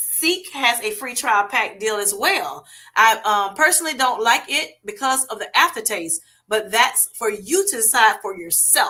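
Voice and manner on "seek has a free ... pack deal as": ordinary delivery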